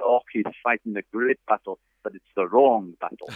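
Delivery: put-on Scottish accent. Retelling what a player's dad said when asked about his son, in a scottish accent. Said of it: "in the Scottish accent".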